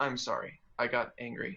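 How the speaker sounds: plain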